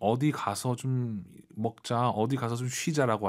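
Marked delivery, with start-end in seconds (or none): none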